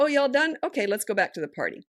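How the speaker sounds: assured, breezy matter-of-fact. Giving advice on a child's tantrums, the speaker shows how to say the line, matter-of-fact, like it's happening. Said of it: "So you say it like this".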